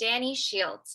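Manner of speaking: name spoken apart, like its own sentence. Demonstrating a self-introduction tip from a workshop, saying the name as its own sentence. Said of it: "almost like its own sentence".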